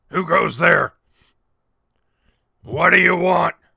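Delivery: very loud, gruff, rough grunting orc voice. Voicing an orc that challenges the adventurers: grunting orc voice. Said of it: "One of them grunts at you".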